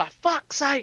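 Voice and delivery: put-on worn-out, fed-up old guy. Imagining an old guy in an office hearing news: imitating an exasperated old guy. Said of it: "there's just this old guy in the office just like".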